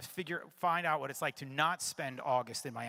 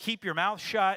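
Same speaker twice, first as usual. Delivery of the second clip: higher-pitched, louder, forceful delivery. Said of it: "in a tone that matched his".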